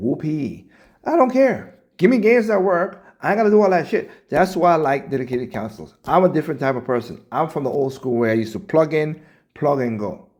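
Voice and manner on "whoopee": hollow, sarcastic, unimpressed cheer. Mocking paying more just for prettier graphics: sarcastic. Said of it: "I'm being sarcastic".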